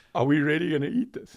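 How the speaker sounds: high, loud voice through barely held giggles. Retelling looking at a plate of steak fat: retelling own giggling question. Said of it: "I literally started giggling".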